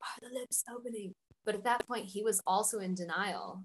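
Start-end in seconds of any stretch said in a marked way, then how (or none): 0.0-1.1 soft, high-pitched half-whisper. Retelling what the midwife asked the husband during the birth: imitating a whisper. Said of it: "'cause she was kinda whispering".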